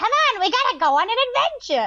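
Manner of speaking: very high, annoying, puppet-like bird voice. Retelling a picture book, the speaker voices the bird, annoying bird voice. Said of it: "And I do that voice".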